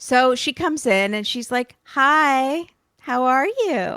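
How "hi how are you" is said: play-acted butter-wouldn't-melt innocence, very slow. Retelling how she greeted him after a fight: imitating an innocent tone. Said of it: "All innocent".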